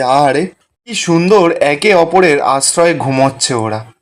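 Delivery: normal talking voice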